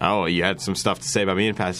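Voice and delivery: ordinary talk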